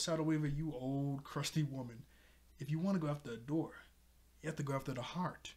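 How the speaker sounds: ordinary talk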